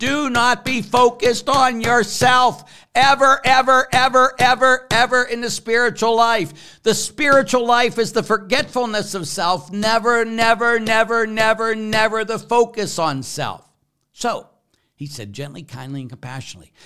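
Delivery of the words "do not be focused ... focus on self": emphatic, forceful, very loud, very high preaching. Speaker addressing listeners, strong and forceful. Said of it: "I get strong like that".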